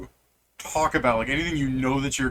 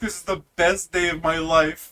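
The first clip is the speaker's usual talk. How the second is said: put-on, mock-crying orc voice, pitched higher; 5 semitones higher than usual. Recounting a game moment, voicing the orc: imitating the orc crying. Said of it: "And the orc crying".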